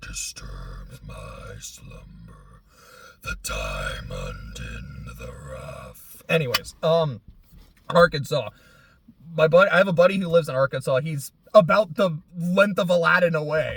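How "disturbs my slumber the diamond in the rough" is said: very slow, soft murmur. Recalling watching Aladdin, quoting the Cave of Wonders in its voice. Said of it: "I just really like the Cave of Wonders voice".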